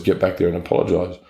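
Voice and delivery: ordinary talk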